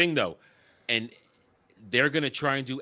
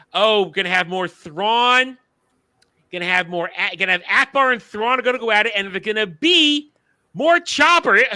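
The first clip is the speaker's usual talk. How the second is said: mocking voice, pitched up high and loud; 7 semitones higher, 8 dB louder than usual. Mocking what Dave Filoni says about upcoming shows: Dave Filoni voice. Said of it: "in his Dave Filoni voice".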